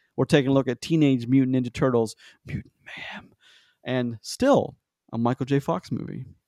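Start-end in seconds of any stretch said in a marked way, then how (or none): 2.5-3.4 breathy, very hushed whisper under the breath. Podcast host announcing next week's movie, whispering part of the title. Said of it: "Why did you whisper that".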